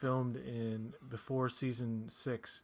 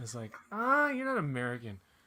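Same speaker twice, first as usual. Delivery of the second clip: ordinary talk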